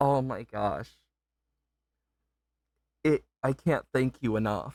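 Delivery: words pushed out while holding back tears. Thanking people for supporting a hobby the speaker loves, holding back tears. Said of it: "I am trying not to cry".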